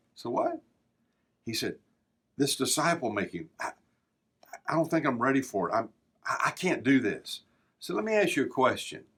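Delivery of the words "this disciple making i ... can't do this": confiding, halting voice, words stumbling out. Retelling a businessman who came up after training: imitating a lowered voice. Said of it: "and lowered his voice".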